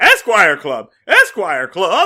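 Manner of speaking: put-on, full-volume, wildly swooping ecstatic yell. Retelling a scene where Barney hears the club's name: imitating Barney screaming in ecstasy. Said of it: "Barney jizzes all over his pants".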